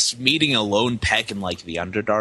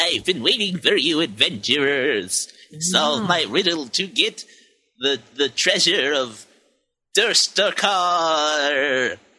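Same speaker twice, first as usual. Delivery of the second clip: small-creature character voice, much higher; 5 semitones higher than usual. Voicing the creatures' leader as he addresses the adventurers; munchkin voice. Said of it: "He sounds like he's a munchkin".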